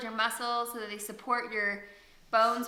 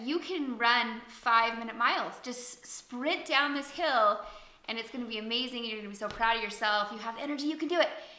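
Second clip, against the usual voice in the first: ordinary talk, nothing marked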